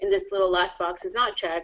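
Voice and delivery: ordinary delivery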